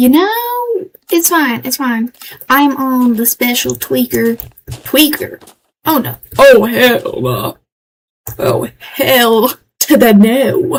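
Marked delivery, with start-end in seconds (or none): 5.8-10.8 heavy, drawn-out Southern US twang. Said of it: "I'm especially southern today".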